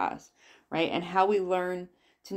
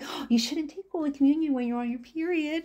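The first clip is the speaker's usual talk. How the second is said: mock, high-pitched, all-cutesy voice; 8 semitones higher than usual. Retelling what a woman at church told her as a girl: imitating a cutesy tone to a child. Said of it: "she's talking to me, like, all cutesy".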